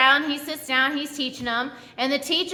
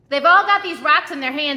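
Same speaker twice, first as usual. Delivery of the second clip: ordinary talk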